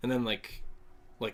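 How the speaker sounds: ordinary delivery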